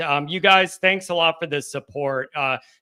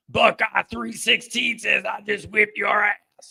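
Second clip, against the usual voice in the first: rough, creaky, raspy wrestler voice; 4 semitones higher than usual. Reading out a paid message in a Stone Cold impression. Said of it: "That's my Stone Cold impression".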